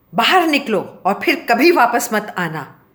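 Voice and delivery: loud shouting, yelling. He throws the narrator out the door, shouting. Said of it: "वो चिल्लाए।".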